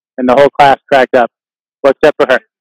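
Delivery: ordinary delivery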